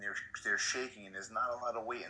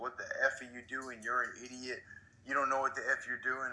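mock angry, furious screaming; 3 semitones higher than usual. Retelling how a coach who screwed up got yelled at: imitating someone screaming. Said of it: "they scream at him at the top of his lungs".

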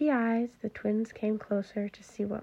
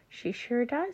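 ordinary delivery

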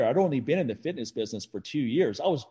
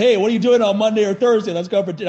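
overeager show of confidence, really loud and pitched-up; 7 semitones higher, 8 dB louder than usual. Retelling how he asked someone out to dinner, retelling his own really loud ask. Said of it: "I was really loud".

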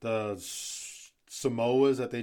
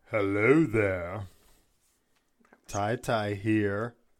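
deep, creepy haunted-house butler voice; 2 semitones lower, 4 dB louder than usual. A podcast host says hello in the intro, sounding like Lurch. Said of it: "You sounded like Lurch from fucking Adam's Family".

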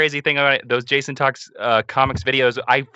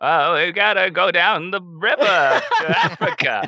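put-on high, pitched-up old lady film-star voice; 5 semitones higher than usual. Urged by the group, the speaker does a Katharine Hepburn impression. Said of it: "Do a Katharine Hepburn".

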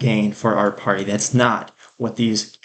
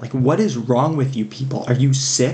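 exasperated, very frustrated, fed-up outburst; 3 semitones higher than usual. Speaking to listeners, very frustrated. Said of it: "I know I sound very frustrated".

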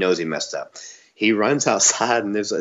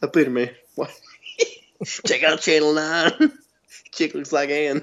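put-on Southern voice, much higher; 7 semitones higher than usual. Telling the other speaker he sounds like the dude from Office Space, doing that Southern voice. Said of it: "That's your go-to Southern voice".

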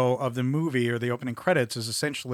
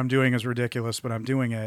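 normal talking voice

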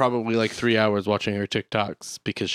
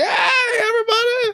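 very high, shrill, loud and shouty; 5 dB louder than usual. Complaining that some TikTok videos are suddenly loud: imitating a loud TikTok video. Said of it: "the next one's like".

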